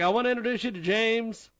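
put-on Boston accent. Retelling a colleague of twenty years introducing him to everyone, boston accent impression. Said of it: "He had a Boston accent".

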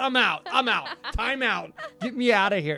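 put-on panicked, frightened outburst voice. Retelling a friend's scared reaction to the movie: imitating panicked speech. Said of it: "Like I was panicked".

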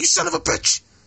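furious outburst. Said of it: "He's like".

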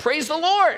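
mock high-pitched, shrill joyful shout. Telling a joke where a lady finds groceries on her porch, shouting. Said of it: "saw a large bag of groceries and shouted".

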